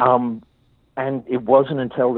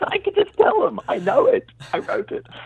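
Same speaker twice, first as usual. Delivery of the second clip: very high-pitched mock protesting tone. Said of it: "And I'm like".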